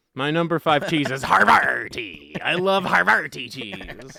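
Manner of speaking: pirate-style character voice. Announcing their number five cheese pick, in a pirate voice. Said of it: "I like to say it like a pirate".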